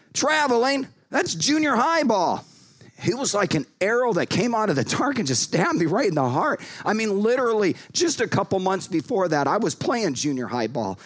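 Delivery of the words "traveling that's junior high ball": high, taunting, heckling shout. Retelling how a rival fan behind the bench called out: imitating a fan shouting. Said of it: "he just shouted out".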